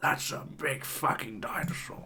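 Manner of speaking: quiet nature documentary narrator. Recalling what they always say watching dinosaur bones, a David Attenborough impression. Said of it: "this David Attenborough impression where I go".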